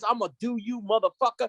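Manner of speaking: put-on aggressive, hostile tone. Retelling a clash at a game, quoting a skinny kid: imitating aggressive taunting. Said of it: "he was like being aggressive with it".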